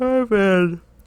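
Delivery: yawning while talking. Answering a question about how things have been, yawning while talking. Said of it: "Don't yawn and answer that".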